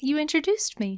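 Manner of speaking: fake, put-on, high, soft voice. A newly introduced co-host answers the host: fake high-pitched voice. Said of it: "Why are you talking high".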